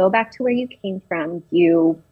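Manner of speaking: usual speaking voice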